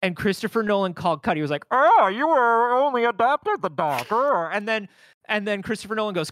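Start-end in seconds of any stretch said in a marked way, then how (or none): 1.7-4.1 loud, slow, silly voice, drawn out big and strange. Retelling an actor's first take on set: Bane voice. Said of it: "that's what Bane sounds like".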